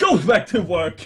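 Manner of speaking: drawn-out, barked, slow, firm, commanding. Voicing a character who orders someone back to work: shouting an order. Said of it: "looks at Margaret and shouts".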